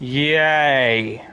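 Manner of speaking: sarcastic, ironic. A streamer wrapping up the stream, with a sarcastic cheer. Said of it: "That was a sarcastic yay".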